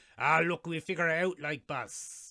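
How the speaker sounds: terrible, bad, exaggerated, over-the-top Irish accent. Imitating an actor hamming up his accent: bad exaggerated Irish accent. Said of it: "that's terrible".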